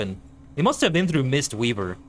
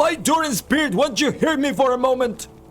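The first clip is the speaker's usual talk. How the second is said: very high, fed-up, desperate, angry pleading dwarf voice; 12 semitones higher than usual. Mimicking a character's cadence, doing a put-on desperate, angry dwarf voice. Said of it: "very desperate and angry and just like fed up cadence".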